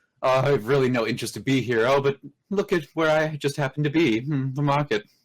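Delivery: casual nonchalance. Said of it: "a very casual, nonchalant".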